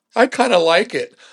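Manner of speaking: mock sheepish, bashful, half-embarrassed tone. Retelling what the engaged man answered: imitating a sheepish reply.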